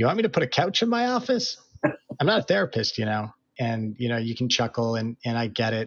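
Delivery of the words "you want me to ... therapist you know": put-on heavy, thick Boston accent, high and swooping. Telling Austin what an advisor once said to them, thick Boston accent. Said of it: "thick Boston accent look at me and say".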